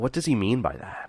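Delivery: ordinary talk, nothing marked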